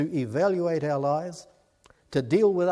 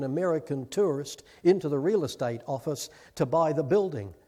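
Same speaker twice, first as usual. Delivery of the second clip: ordinary talk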